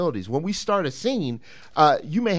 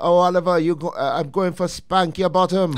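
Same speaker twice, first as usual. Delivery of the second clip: put-on Caribbean accent, higher and slower; 4 semitones higher, 4 dB louder than usual. Retelling how their mother warned them of trouble, in a Caribbean accent. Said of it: "my mother's from the Caribbean, so she would say it with her accent".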